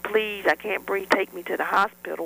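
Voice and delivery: ordinary talk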